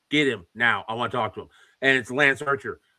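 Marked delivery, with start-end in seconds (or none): 0.1-1.4 mock authoritative voice. Retelling a wrestler demanding the promoter backstage: imitating Lance Archer's commanding voice. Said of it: "said that with such a commanding voice".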